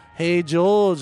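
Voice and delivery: put-on Liverpool accent. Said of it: "he talks to me in the Beatle voice".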